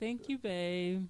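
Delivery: downcast, sad, sorry-sounding voice. Speaker asked to say thank you to babe, sad thank-you. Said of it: "you sounded so sad".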